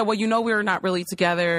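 ordinary talk

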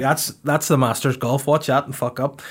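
ordinary delivery

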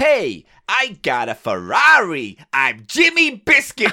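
slow, unconvincing bad American accent. Voicing a toy monkey, attempting a bad American accent. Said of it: "I can't do American accents".

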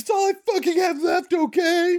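shrill scream at a very high pitch. Retelling the moment she screams at a relentless man; imitating a woman screaming. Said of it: "this is when she screams".

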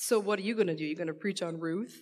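mock teasing, joking and sarcastic jab. Retelling what someone asked this week: imitating a sarcastic joking question. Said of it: "kinda sarcastically, jokingly said to me".

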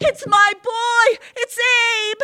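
very high, stretched-out, drawn-out shrieking scream. Narrator reading a woman's cry as knocking sounds at the door, screaming. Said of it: "Erda screamed".

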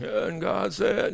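near-whispered, airy, breathy, hushed voice. Imagining another president reading scripture aloud: Bill Clinton impression. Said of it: "You probably get Bill Clinton".

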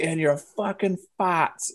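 put-on strong New England accent, high. Retelling a film scene where one character blows up on another, do Robert Pattinson's hardcore New England accent. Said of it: "He's got this hardcore New England accent".

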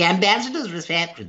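put-on ridiculous flourish. Retelling how a line was read before, imitating own over-the-top read. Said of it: "Rather than going".

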